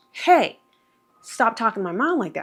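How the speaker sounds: angry retort tone. Retelling taking the phone to defend the speaker's mom: imitating own angry words. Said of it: "now I'm pissed".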